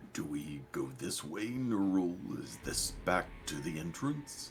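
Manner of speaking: very hushed, quiet voice. A player speaks in character, asking a companion about the way: very hushed tone. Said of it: "talks in a very hushed tone".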